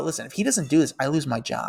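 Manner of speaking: normal talking voice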